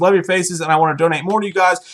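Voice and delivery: ordinary talk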